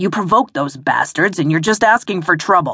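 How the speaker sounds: angry, growling voice. A man holding a woman tightly scolds her, angry growl. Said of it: "he growled".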